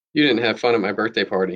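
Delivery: ordinary delivery, nothing marked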